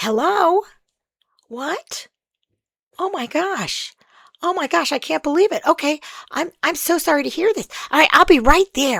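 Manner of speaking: fake shocked alarm. Showing how to take a pretend excuse call on a date: pretending to be shocked on a call. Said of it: "the call is like".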